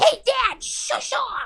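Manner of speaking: very high, silly, made-up little pet voice. Voicing pet cats talking to their owner: silly little voice for the cats. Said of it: "I make my cats call me Dad in a silly little voice".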